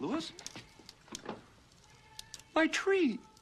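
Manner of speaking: put-on tearful voice. Retelling a movie scene, Clark seeing his burnt tree: imitating Clark nearly in tears. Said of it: "nearly in tears".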